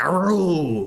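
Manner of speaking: aru held long and high, cartoonish exclamation. Explain where your mind went on hearing "a row", with a President Nixon from Futurama impression. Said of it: "Aru is what President Nixon says in Futurama".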